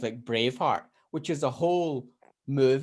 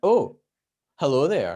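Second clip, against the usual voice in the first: smooth, cool delivery, a bit louder; 6 dB louder than usual. Acting out a hoped-for greeting: smooth Ewan McGregor voice. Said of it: "sort of like a Ewan McGregor".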